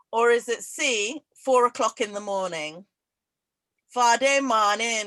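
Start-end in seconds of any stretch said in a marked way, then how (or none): 3.9-5.0 very bad put-on Guyanese accent. Reading a quiz phrase aloud to a listener, in a very bad Guyanese accent. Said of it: "Said in a very bad Guyanese accent".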